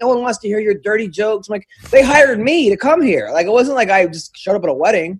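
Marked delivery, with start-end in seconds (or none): 0.0-1.5 acted-out disapproving scolding tone, yelling. Telling jokes at a wedding, the speaker retells the grandma's outburst: retelling grandma's yelling. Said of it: "the grandma started yelling at me".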